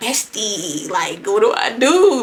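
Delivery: slow, hushed, half-whispered stage whisper. Retelling half-whispering to a best friend at a party: retelling a half-whisper. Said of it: "I'm trying to whisper in my bestie ear".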